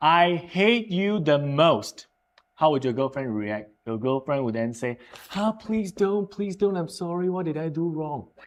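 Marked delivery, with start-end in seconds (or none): 5.3-8.3 exaggerated, overdone pleading, higher and quieter. Teaching about repetition, playing a girlfriend's reaction: exaggerated pleading. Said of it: "I'm exaggerating".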